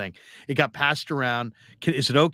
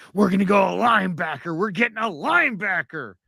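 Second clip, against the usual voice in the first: mock, frantic, overexcited, pitched-up, losing-it rant; 6 semitones higher than usual. Retelling a guy during the NFL Draft, acting out someone losing it. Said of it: "this guy's losing his mind".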